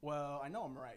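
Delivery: normal talking voice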